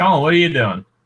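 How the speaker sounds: yelling, calling out at full volume. Calling out to someone named Colin who isn't there: yelling. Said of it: "I'm yelling as if I need him to hear me".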